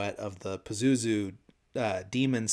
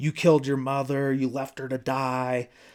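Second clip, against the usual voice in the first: loud, furious, accusing yell; 4 semitones higher, 5 dB louder than usual. Retelling a movie scene where a possessed girl accuses a priest: imitating someone yelling accusingly. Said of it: "she starts yelling at".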